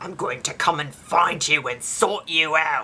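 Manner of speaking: put-on threatening tone in an Australian accent. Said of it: "I sound Australian, though".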